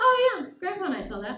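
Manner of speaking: put-on nonchalant offhand tone. Retelling how a grandmother answered news of a giant bird: imitating grandmother's nonchalant tone. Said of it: "in the most nonchalant way I've ever seen".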